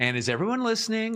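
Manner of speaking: fast, overdone, overmodulated kindergarten-teacher voice. Showing how presenters must play the kindergarten teacher: overmodulated kindergarten-teacher voice. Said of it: "you got to be the kindergarten teacher".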